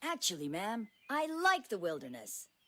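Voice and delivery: very soft, self-assured, sing-song confident voice. Voicing the boy's reply to the camp founder: with confidence. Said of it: "I said with confidence".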